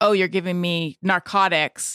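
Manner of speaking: ordinary talk, nothing marked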